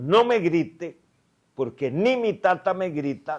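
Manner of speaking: angry, defiant tone. Retelling how they answered a man yelling at them in his office, retelling an angry retort. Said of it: "le doy un huevazo a la mesa".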